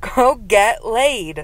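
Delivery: mock very high, shrill girl's shout. Retelling a girl on a roof calling down: imitating a girl shouting. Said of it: "I hear a girl shout".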